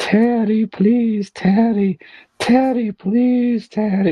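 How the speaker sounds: put-on very high, very drawn-out, slow tearful crying. Retelling a crying woman begging not to be fired, imitating her begging. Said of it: "like begging".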